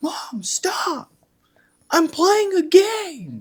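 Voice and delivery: loud, very high, grating voice. Retelling old gaming videos, imitating Stone Mountain 64 being obnoxious. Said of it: "super obnoxious".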